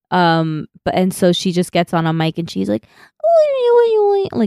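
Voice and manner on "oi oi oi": put-on high, cute little-girl voice. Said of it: "in her cute little voice".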